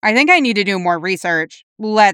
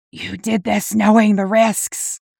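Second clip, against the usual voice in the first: raspy, hoarse, spat-out, hissing ghostly voice; 3 semitones higher than usual. Narrator voicing a spirit speaking to Dean, hoarse, hissing spirit voice. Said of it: "a voice spits, hoarse and hissing".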